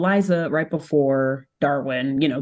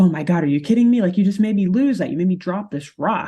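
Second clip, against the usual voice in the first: put-on fast, aggrieved, exasperated, upset complaining; 4 semitones higher, 3 dB louder than usual. Telling a story, acting out how he reacted at that point: retelling an upset complaint. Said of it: "he is pretty upset at this point".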